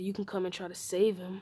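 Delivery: put-on evil, villainous, menacing delivery. Telling a made-up Naruto story, voicing Naruto's taunt to the fans: evil voice. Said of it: "In an evil voice".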